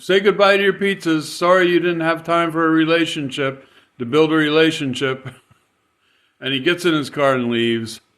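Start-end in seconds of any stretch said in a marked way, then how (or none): 0.0-5.3 mock, high-pitched, laughing, gloating jeer. Retelling what a man said while walking back to his car, imitating him laughing. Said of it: "he's just like laughing and saying".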